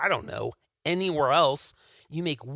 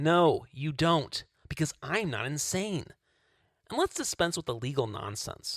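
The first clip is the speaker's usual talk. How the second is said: plain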